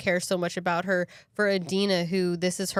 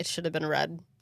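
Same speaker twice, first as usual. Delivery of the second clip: put-on breezy, unbothered, offhand nonchalant tone; 2 semitones lower, 5 dB quieter than usual. Retelling how a character dismissed her vest: imitating a nonchalant remark. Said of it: "Just nonchalant".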